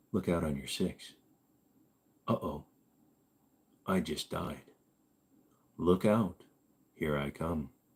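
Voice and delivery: soft, smooth, low voice. Showing what others in the game lobby would hear from them, calm, never raising voice. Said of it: "I was going to do an entire run just doing that voice".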